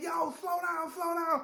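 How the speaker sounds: shouting. Retelling clinging to a swerving car's roof, imitating own past yelling.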